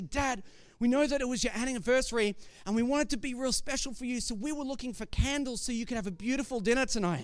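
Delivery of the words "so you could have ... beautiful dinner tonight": normal talking voice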